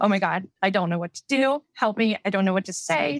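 acted, frantic, panicked delivery. Retelling a phone call to a brother for help, acting out panicking. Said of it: "calm down".

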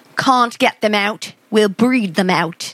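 bad British accent attempt that sounds Australian. Speaker attempts a British accent for the others to hear: bad British accent attempt. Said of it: "it's still Australian".

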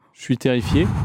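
normal talking voice

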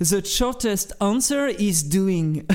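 ironic, self-mocking put-on English accent. Quoting an English proverb to the listener, in a self-mocking English accent. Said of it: "mon fantastique accent anglais".

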